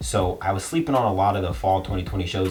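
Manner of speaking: ordinary talk, nothing marked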